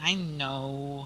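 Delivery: slumped, resigned, soft, defeated sighing, know drawn out. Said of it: "he just sort of slumps".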